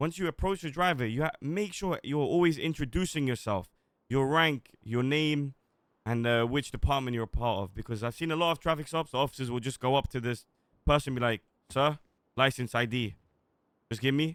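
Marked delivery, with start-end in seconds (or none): 11.7-14.4 put-on emotionless curt voice, slower. Teaching officers how to approach a driver, mimicking the wrong way: imitating an emotionless officer. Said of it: "this is not what we want".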